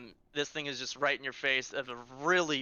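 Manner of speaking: ordinary delivery, nothing marked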